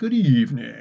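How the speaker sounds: vampire-style voice. A caller greets the show host, vampire voice. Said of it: "You sound like a vampire".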